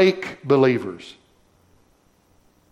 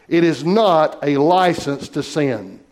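slow, weighty stress on the word not. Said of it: "I want to emphasize that word not".

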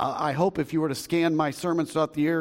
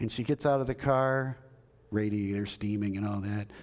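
ordinary talk

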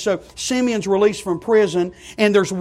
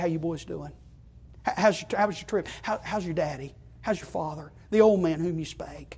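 gentle, tender, very hushed voice; 4 semitones lower, 11 dB quieter than usual. Telling the story of Joseph and his brothers, the speaker retells him in a tender voice. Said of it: "In a tender voice".

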